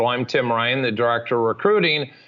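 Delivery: plain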